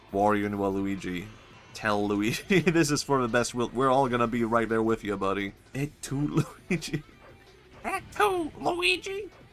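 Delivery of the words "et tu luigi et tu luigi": very high, throat-straining voice, drawn out. A streamer voicing Mushroom Kingdom characters, in a Toad voice. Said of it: "I should never do a Toad voice. It destroys your throat".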